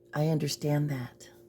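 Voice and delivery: gentle, hushed, soft reading voice. Read her line the way she would read it, imitating Sarah Boone's soft voice. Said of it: "how she would read it in her soft voice".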